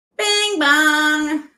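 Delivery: shouted "bing bong", "bong" drawn out. Calling out as a caller hits the snare: yelling bing bong. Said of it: "hear me yell bing bong".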